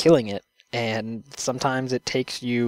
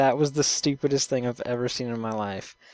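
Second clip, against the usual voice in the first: ordinary delivery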